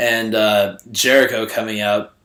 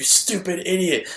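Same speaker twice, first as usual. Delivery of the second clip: put-on high-pitched, childish playground-style taunting voice; 9 semitones higher than usual. Quoting Jericho's favorite phrase these days: imitating Jericho's insult. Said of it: "his favorite phrase these days seems to be "stupid idiot."".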